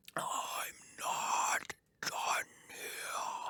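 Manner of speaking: exaggerated, very slow, eerie, creepy over-the-top whisper. Imitating a recorded ghost voice heard on a recording: imitating a creepy over-the-top voice. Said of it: "Felt really over the top".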